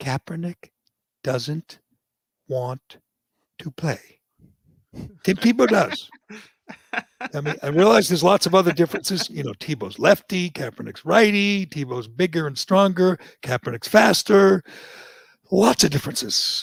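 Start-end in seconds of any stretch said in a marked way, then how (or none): 0.0-4.0 slow, halting, deliberate, spelled out word by word. Speaking to everybody, even Everett, saying it slowly. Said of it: "I'm going to say this slowly".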